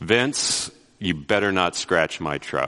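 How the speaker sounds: grave, dead-serious, low tone. Retelling your grandfather warning you while you work the gas, imitating a very serious tone. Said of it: "in a very, very serious tone".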